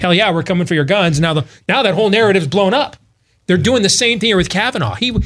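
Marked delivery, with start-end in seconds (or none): none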